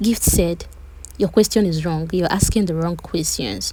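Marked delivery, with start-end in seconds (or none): none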